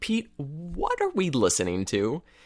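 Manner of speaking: feigned curiosity, sing-song and drawn out. Retelling asking a store owner about bad music: imitating a feigned curious tone. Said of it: "match the tone of my voice just perfectly to make it sound like I was genuinely curious".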